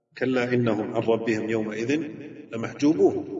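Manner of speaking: normal talking voice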